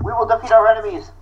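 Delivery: high, exaggerated, over-the-top anime battle cry. Showing how written text comes across, with anime-style shouting. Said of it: "kind of anime shouty".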